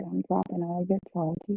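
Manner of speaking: normal talking voice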